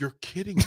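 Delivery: put-on giggling while talking. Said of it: "She's giggling".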